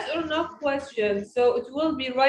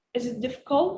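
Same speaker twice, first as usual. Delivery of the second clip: rising pitch on the word "difficult"; 4 dB quieter than usual. Showing how to ask a question, rising pitch on difficult. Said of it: "I raise my voice up in this word".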